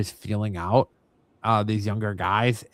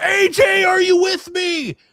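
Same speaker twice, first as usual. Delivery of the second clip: scream, higher and louder; 8 dB louder than usual. Retelling how the ref reacted to a fading wrestler: imitating the ref screaming. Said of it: "the ref was sitting there screaming".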